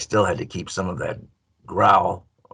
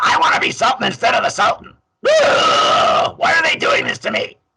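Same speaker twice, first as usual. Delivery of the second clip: very high, raised growly voice up in the throat; 8 dB louder than usual. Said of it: "Is No Good had a high pitched".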